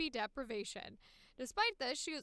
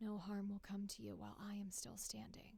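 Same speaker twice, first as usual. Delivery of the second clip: gentle, kind, soft, low, matter-of-fact voice; 4 semitones lower, 8 dB quieter than usual. Trying out a character's voice for a line of dialogue, in a soft low voice. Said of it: "sort of that lower pitch um, and doing it a bit of like a soft low".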